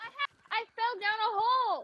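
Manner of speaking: panicked screaming. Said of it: "Sorry for the screaming".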